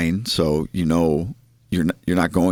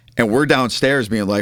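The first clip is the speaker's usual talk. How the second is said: ordinary talk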